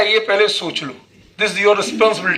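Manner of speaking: ordinary talk, nothing marked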